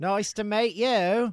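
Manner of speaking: horribly done, bad put-on Australian accent. Podcast host greeting an Australian guest, bad Australian accent. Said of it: "was that a good Australian accent?".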